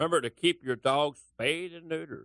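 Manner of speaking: terrible cartoonish host voice. Asked for a Bob Barker voice, the speaker tries again with a terrible Bob Barker impression. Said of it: "can you do a Bob Barker voice?".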